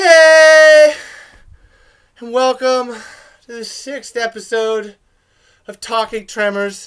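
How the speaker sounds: mopey, sad-sounding, very loud, shrill, high voice. Podcast host welcoming listeners to an episode, sounding sad. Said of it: "I sound all sad".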